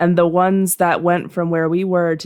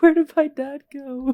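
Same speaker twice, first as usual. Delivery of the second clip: put-on crying, wailing child voice, much higher; 9 semitones higher than usual. Telling a story about a girl whose dad vanished, imitating a crying child. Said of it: "And just like start wailing".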